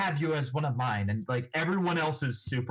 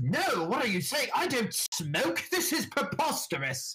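acted-out haughty, affronted, indignant tone, pitched up; 10 semitones higher than usual. Retelling how he answered an offer to go smoke, mock-haughty indignant retort. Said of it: "gets on his high horse and goes".

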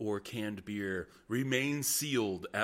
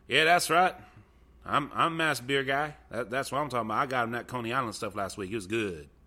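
put-on good old boy voice, louder; 2 semitones higher, 6 dB louder than usual. Imitating the beer guy getting up on the show: imitating a good old boy. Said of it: "he is straight up good old boy".

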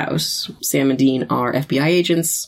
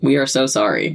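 put-on dispassionate voice; 3 semitones lower than usual. Retelling a TV scene, voicing Sam's apology: imitating Sam, mock dispassionate. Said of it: "very, like, dispassionate, says".

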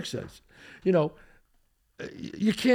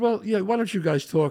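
normal talking voice

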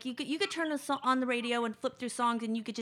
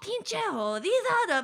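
put-on very high scolding yell in Spanish; 9 semitones higher, 6 dB louder than usual. Retelling how Randy scolded the speaker: imitating Randy yelling in Spanish. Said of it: "he'd start yelling at me in Spanish".

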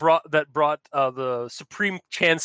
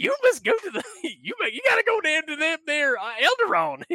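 put-on crazy, kooky old prospector voice, much higher; 13 semitones higher than usual. Voicing a force ghost giving advice, in a crazy old prospector voice. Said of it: "the crazy prospector voice".

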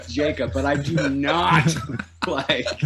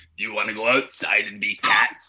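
put-on low, rough seventy-year-old smoker's voice; 6 semitones lower than usual. Retelling what a preschooler said: imitating a seventy-year-old smoker's voice. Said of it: "her voice was the voice of, like, a seventy-year-old smoker".

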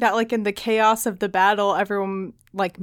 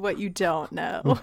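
put-on quiet laughing voice, lower and quieter; 4 semitones lower, 6 dB quieter than usual. Imagining a character overhearing oblivious people: imitating Éowyn laughing under her breath. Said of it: "laughing under her breath".

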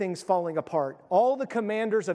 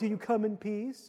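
put-on mocking taunting tone, quieter; 2 semitones higher, 6 dB quieter than usual. Retelling a queen's words to an approaching army commander: imitating a mocking question. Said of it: "That's mocking".

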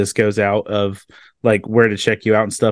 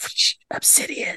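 put-on soft slow childlike whispering. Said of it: "childlike whisper voice".

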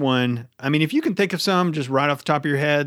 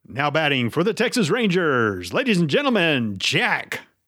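stadium pa announcer voice; 2 semitones higher than usual. Introducing the other speaker as a batter: ballpark announcer voice. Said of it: "here we go".

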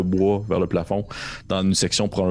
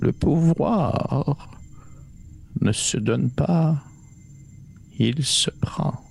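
put-on small, little, senile old voice, pitched up; 7 semitones higher than usual. A voice heard behind a gust of wind, small senile voice. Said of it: "cette espèce de petite voix sénile".

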